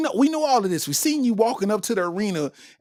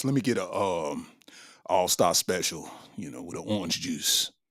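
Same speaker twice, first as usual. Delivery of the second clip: very low, deep bass voice; 13 semitones lower, 8 dB quieter than usual. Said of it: "ordered his Waffle House to go with a deep voice".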